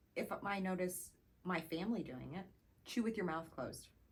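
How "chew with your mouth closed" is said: unfriendly tone, quieter and faster. Showing how she says it to her own family members, not nice. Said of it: "But you don't say it nice. / I say it exactly like that".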